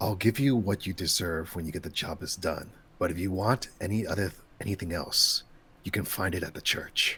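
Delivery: ominous, menacing, threat-laden foreboding tone. Voicing a quest giver offering payment after the job: ominous tone. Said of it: "say things as ominously as possible".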